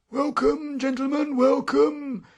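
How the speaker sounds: dry, husky, croaking call, very high-pitched. The wall sentry calls out from behind the newcomers in a dry, husky voice. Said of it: "A dry, husky voice called out behind us".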